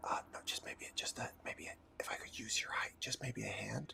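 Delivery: speaking in a whisper. During a tabletop game, one player asks another for a hand, whispering. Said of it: "I'm still whispering".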